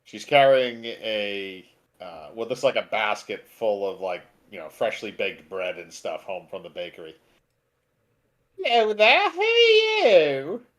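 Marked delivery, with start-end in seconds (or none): 8.6-10.6 very high, swooping, sing-song gnome woman voice. Narrator voicing a gnome woman meeting new arrivals in town, gnome woman voice. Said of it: "a gnome woman".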